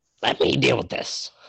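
broken, rough, creaky squawking bird voice. A bird turns to the listeners and speaks, squawking bird voice. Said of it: "the bird kind of turns and squawks to you".

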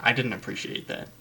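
normal talking voice

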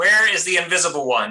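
mild, loud in-character calling-out voice. Passing the turn to Diamond, a player has their character yell: yelling out. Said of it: "I'm going to pass it over to Diamond and yell out".

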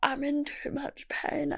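acted whispery, tearful, pained crying, soft, slow, breathy. Recounting answering a woman who called you in, retelling your own crying. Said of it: "And I was crying".

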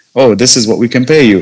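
normal talking voice

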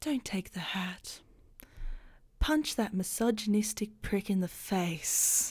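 soft, hushed, softly spoken inner voice. Game master voices a different voice the player hears, in a soft voice. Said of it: "It's kind of like a soft voice saying".

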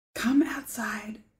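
very quiet, hushed whisper. Retelling how Zeke phoned and told the speaker to come outside, very quietly. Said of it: "Very quietly".

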